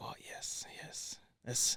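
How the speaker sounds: put-on heavy Spanish accent. Quoting their therapist's reply during a session, in a thick Spanish accent. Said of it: "he has a thick Spanish accent".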